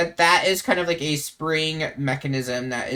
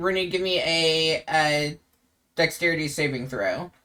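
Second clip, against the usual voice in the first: ordinary talk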